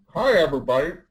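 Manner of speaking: talking with food in mouth. Introducing themselves on a live stream, talking with food in mouth. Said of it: "I got food in my mouth".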